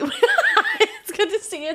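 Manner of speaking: said while laughing.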